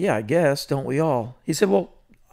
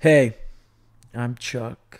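deliberate, unhurried, really slow, drawn-out stage delivery; 3 semitones lower than usual. Retelling how Chuck opened his shows on stage: imitating Chuck talking really slow. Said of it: "Talk really slow".

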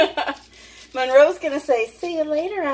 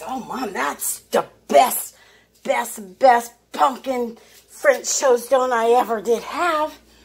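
put-on voice of a dog. Speaking for the dog after she brings her plate: voicing the dog's thoughts. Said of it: "She says".

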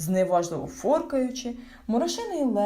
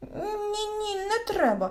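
very high frightened cry, Ні stretched out; 12 semitones higher than usual. Narrator reads a character answering a creature's threat, frightened. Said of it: "злякався хропусь".

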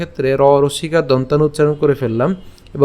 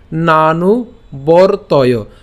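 slow, syllable-by-syllable "nanu vartaya". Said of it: "উচ্চারণের সুবিধার জন্য এভাবে ভেঙে দিয়েছি".

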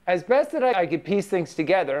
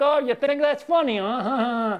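put-on Long Island accent with huh drawn out; 6 semitones higher than usual. Recounting how you would mimic a Long Island guy to get laughs, in a put-on Long Island accent. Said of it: "if he's a Long Island, I'd be like".

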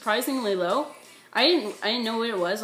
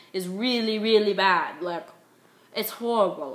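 clumsy, unconvincing, bad put-on English accent. Talking directly to viewers, in a bad English accent. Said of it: "my English accent, as you guys can be hearing right now".

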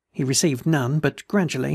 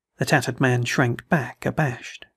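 ordinary delivery

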